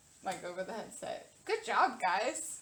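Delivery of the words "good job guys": patronizing, condescending, talking-down tone. Answering over the headset in character about a little snake: patronizing.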